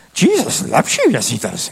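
loud alien creature voice. Show listeners the impression you can do after asking if they are ready: a Yoda impression. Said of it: "I do a great Yoda impression".

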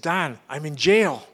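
put-on excited voice. Retelling a phone call from an evangelist, imitating his excited voice. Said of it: "I could just hear some excitement in his voice".

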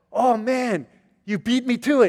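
mock excited, high-pitched, very slow and drawn out. Retelling a friend's words after the worship service, imitating Chris's excited voice. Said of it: "so excited".

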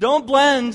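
loud, high rallying call-out.

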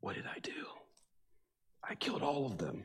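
hushed, whispered muttering. Retelling what a man with a live microphone muttered walking to the bathroom, imitating a whisper. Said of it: "he's heard whispering to himself".

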